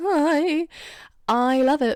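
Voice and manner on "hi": high "hi" that wobbles awkwardly. Imitating a character greeting someone awkwardly: Arthur's wobbly voice. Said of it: "the way his voice kind of wobbles".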